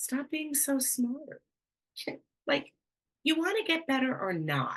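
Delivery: firm, blunt tone. Retelling words heard in dad's voice: imitating dad speaking firmly. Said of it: "in a way that a dad could directly, firmly".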